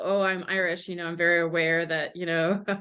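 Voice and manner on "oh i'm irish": ordinary talk, nothing marked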